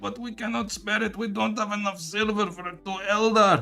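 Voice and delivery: put-on straining voice, vaguely Mexican accent. Joking about running out of silver in a put-on Eldar voice. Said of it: "That's how this Eldar speaks".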